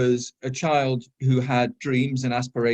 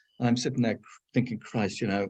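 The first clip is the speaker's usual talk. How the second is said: ordinary talk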